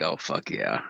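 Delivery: contented, breathy, pleased whispered murmur. Voicing what the half-smiling man in the video is thinking: imitating a half-smiling guy. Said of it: "He's, like, half smiling".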